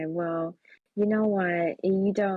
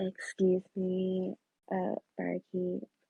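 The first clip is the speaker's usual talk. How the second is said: slow, slightly sultry, seductive voice; 4 dB quieter than usual. In a role-play scene, the speaker's character calls to the barkeep: slightly sultry voice. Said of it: "I change my voice slightly to be a little bit more like sultry".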